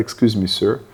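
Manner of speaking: very polite, courteous, deferential tone. Retelling asking a lecturer to go to the toilet: imitating own very polite request. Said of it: "very polite".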